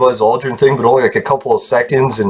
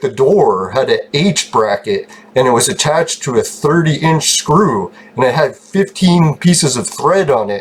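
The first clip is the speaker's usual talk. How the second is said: usual speaking voice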